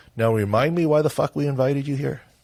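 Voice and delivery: flat, deadpan delivery. Retelling a remark one man made to another on a trip, in mock deadpan. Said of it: "Bill said to him in complete deadpan".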